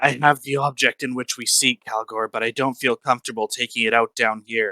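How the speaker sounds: soft whisper. In character, the player whispers a message in Draconic into another character's ear. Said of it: "I'm going to whisper in his ear".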